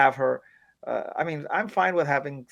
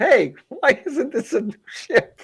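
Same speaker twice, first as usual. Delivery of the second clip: very high, loud, stretched-out, drawn-out shriek; 11 semitones higher, 7 dB louder than usual. Criticizing a scene, acting out how she'd scream at them, imitating someone screaming. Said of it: "She'd be screaming at them".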